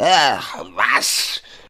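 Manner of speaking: put-on high, loud, boozy, slurred drunken exclamation. Reading a story, a man who has had a lot to drink replies: drunken slurring. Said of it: "Lallte Kellington".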